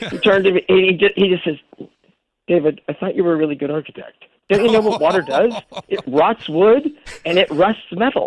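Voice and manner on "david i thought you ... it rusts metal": ordinary talk, nothing marked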